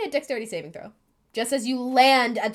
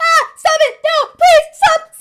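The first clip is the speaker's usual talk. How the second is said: screaming, much higher and louder; 14 dB louder than usual. As the players near a farm, an unseen voice cries out: screaming. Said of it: "one scream".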